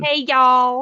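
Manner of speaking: put-on southern American accent. Chatting about favourite accents, showing a southern American accent. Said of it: "like the southern".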